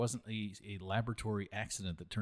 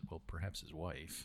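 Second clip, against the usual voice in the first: mock under-breath mutter, quieter; 4 semitones lower, 8 dB quieter than usual. Retelling a curator's reply during a history segment, imitating an under-breath remark. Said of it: "under her breath".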